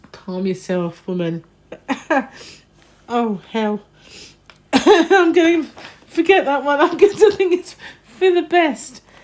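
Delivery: speech breaking up in helpless laughter. Reading out magazine titles and trying to recover: laughing uncontrollably while talking. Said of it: "I couldn't control my laughter anymore".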